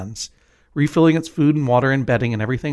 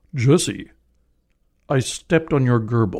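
staged, grandly dramatic, theatrical delivery. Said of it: "my best [name]".

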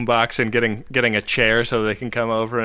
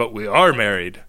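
ordinary talk, nothing marked

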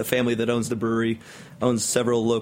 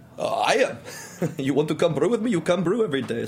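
put-on German accent, pitched up; 6 semitones higher than usual. Retelling how the German brewmaster behind the bar answered you: German accent. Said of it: "this very stout German man behind the bar".

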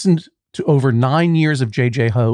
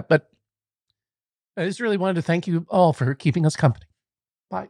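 choked up, voice catching, soft and high; 5 semitones higher, 5 dB quieter than usual. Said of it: "Didn't mean to get choked up".

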